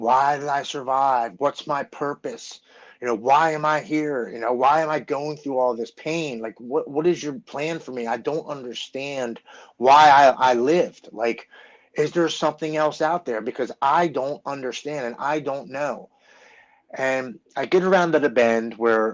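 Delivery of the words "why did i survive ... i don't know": mock tearful, crying pleading. Retelling a drive alone after surgery, retelling crying while pleading. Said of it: "I'm crying and I'm banging on the steering wheel".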